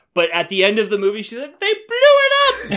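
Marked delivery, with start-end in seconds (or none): 1.6-2.7 tiny, very high little chipmunk squeak. Retelling what she said at the end of the movie: tiny little chipmunk voice. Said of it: "Tiny little chipmunk voice".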